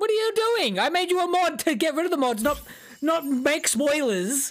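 exasperated, pissed-off yelling, pitched high.

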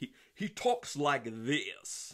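bad over-the-top English accent. Describing how this guy talks: terrible over-the-top English accent. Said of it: "that was a terrible accent".

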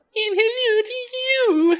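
very high, bright, chirping creature voice. A narrator voices a tiny winged creature replying to a greeting: Jann's chirping voice. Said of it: "the creature replies, chirping".

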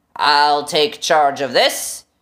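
deep, rough, rasping voice. Narrator reads a strange voice cutting into Shanks's earphones: deep, rasping voice. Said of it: "said the deep, rasping voice".

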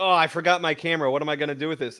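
ordinary talk, nothing marked

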